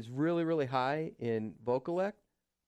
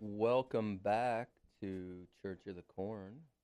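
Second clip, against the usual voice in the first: put-on seductive tone; 4 semitones lower, 5 dB quieter than usual. Radio host welcoming listeners back after a break, in a seductive voice. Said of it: "get a little seductive in the vocal tones".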